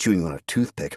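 ordinary delivery

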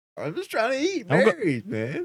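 very high, sing-song, swooping talking bear voice. Voicing a bear that is told it is trespassing, in a talking bear voice. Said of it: "The bear's like".

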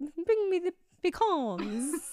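bad, high-pitched fake British accent. On a podcast, saying pecan sounds British, the speaker tries a terrible British accent. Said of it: "that was a terrible accent".

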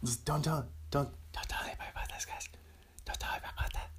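hushed, soft, conspiratorial whisper. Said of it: "I'm just whispering a little secret to it".

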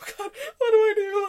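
mock suppressed laughter. Retelling how the speaker's brother reacted while the speaker cried: imitating someone holding back laughter. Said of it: "trying not to laugh".

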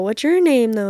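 ordinary talk, nothing marked

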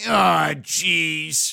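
over-the-top exaggerated comic parody voice. Showing the voice used in a clear parody, exaggerated comic voice. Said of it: "I'll speak in the voice, I know no one who speaks in this voice".

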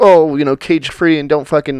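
ordinary talk

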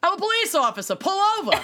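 put-on Boston accent, pitched very high. Speaker quotes a man claiming to be a police officer; Boston accent impression. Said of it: "He sounds so Boston".

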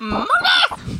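very high, really loud huge shout. A character shouts at monkeys with a magically amplified voice, really loud shout. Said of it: "Really, really loud, though".

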